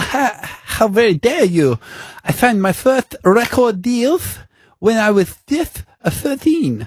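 put-on Colombian Spanish accent. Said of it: "This accent is not a good".

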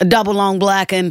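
put-on Australian-American voice. Answering a request to voice Ford Ranger as a human: Ford Ranger as a human voice. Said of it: "That's how he can sound".

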